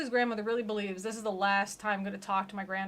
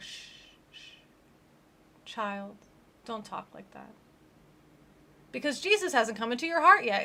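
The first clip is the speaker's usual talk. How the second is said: grandma voice, calm and soothing, shushing. Retelling Ashley's talk with her grandma, speaker voices Grandma: imitating Grandma shushing. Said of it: "And Grandma's like".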